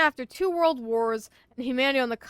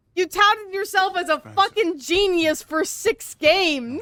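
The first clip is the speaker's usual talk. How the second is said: loud, high-pitched, drawn-out outraged yelling into mic; 7 semitones higher, 6 dB louder than usual. Reacting to a man taking credit for someone else's work: yelling. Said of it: "yelling into this microphone".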